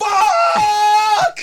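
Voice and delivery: very loud, very high-pitched screamed shout. Recalling lying down in the car after a failed audition: retelling a scream.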